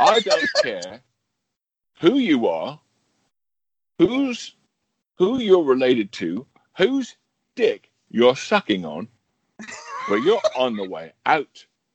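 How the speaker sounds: put-on London accent. Acting out a Glengarry Glen Ross rant in a Michael Caine-off: Michael Caine voice. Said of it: "Michael Caine once auditioned for Glengarry Glen Ross".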